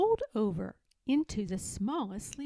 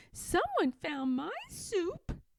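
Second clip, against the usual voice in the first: high, squeaky voice swooping up and down; 7 semitones higher than usual. Reading the story aloud, voice Baby Bear's line in her high squeaky voice. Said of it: "in her high squeaky voice".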